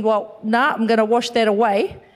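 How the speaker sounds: ordinary delivery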